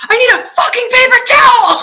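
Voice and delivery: shrill, very high, loud panicked scream. Recounting an emergency at the track, answering the man offering help: retelling a panicked scream. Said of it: "I'm panicking. I'm screaming".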